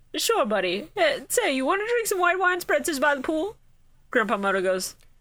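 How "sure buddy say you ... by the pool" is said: high character voice, pitch swooping all over. Acting out Pegasus inviting Grandpa Moto for a drink: acting as Pegasus. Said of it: "Pegasus just goes".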